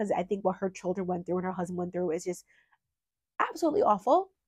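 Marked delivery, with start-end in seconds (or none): 1.5-4.2 choking up, fighting tears, pitch swooping. Former witness reading about a woman's children and husband, holding back tears. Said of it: "trying not to get emotional".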